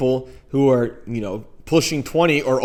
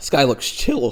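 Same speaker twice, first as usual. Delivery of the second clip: voice breaking and cracking partway through. The speaker mocks how dating profiles look to a stranger; voice cracking. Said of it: "my voice cracked".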